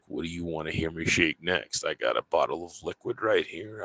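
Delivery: close, soft ASMR half-whisper. Showing how an asmr live stream would sound: asmr voice. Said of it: "I'll put on that A S M R voice".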